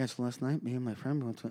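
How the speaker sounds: talking as softly as possible, very hushed. Retelling filming a TikTok outside a friend's apartment: retelling talking as quietly as possible. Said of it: "I'm talking as quiet as possible".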